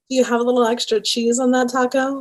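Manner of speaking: come-hither sultry, sexy seductive delivery. Asked by the group to say the line sexy, sexy voice. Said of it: "But say it like sexy".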